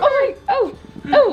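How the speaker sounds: very high-pitched, sing-song pet-talk cooing.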